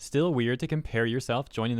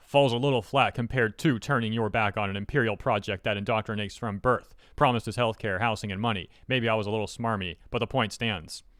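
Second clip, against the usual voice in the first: ordinary delivery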